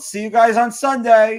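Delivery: loud, high shouted yell. Retelling waving goodbye after a photo: imitating own past yell. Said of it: "and I yelled".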